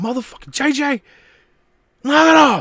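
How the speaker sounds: very high, shrill, loud yell. Retelling yelling at a moody old dog: imitating own past yelling. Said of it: "And I'd be yelling out".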